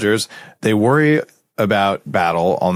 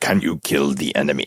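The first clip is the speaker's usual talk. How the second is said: bad, not very good, fake Russian accent; 7 semitones lower, 4 dB quieter than usual. Discussing what the Russians cared about, a speaker asks in a bad put-on Russian accent. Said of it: "With that accent".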